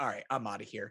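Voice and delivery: teasing, joking, playful delivery. Retelling how he reacted on learning the other man was a Patriots fan: retelling a joking remark. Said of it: "And so I very jokingly was like".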